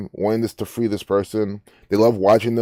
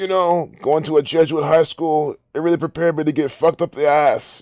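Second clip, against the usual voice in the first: put-on raspy New York accent, pitched up; 5 semitones higher than usual. Imagining how a man would say this, in a raspy New York accent. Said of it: "I can hear him in his raspy voice".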